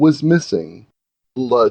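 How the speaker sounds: plain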